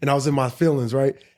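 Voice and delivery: ordinary talk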